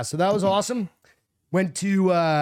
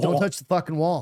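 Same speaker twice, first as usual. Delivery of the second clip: plain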